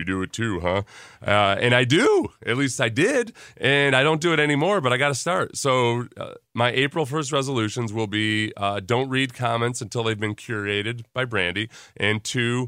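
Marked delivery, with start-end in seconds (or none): 0.0-0.8 put-on deep voice. Retelling a man's reply after asking about his pep talk, imitating a deep voice. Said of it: "ND with his deep voice".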